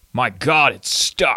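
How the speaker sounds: very slow, badly acted delivery. Recalling a game character at a door that won't open, bad Cold Fear voice acting. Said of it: "voice acting ... it was so bad".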